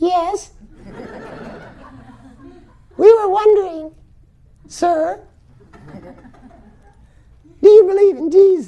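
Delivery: tiny, very high, meek little voice. Retelling meeting Yogi Bhajan, the speaker imitates a 20-year-old's question in a meek voice. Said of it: "this little meek sound came out".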